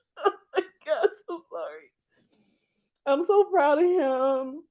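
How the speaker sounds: high, tearful, crying speech. Speaking to the audience about the nephew living with the family, crying while talking. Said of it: "I'm really crying".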